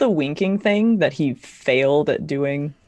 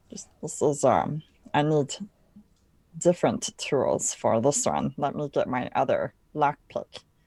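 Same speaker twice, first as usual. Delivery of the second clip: hushed whispered aside; 7 dB quieter than usual. Speaking in character while pretending to switch lockpicks: whispering in character. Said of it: "kinda whispering over towards Shahar".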